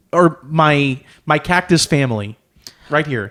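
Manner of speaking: plain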